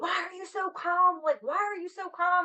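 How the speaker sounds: screaming at a high pitch. Retelling a shooting scene where the partner screams at the speaker: imitating partner screaming. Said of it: "he's screaming at me".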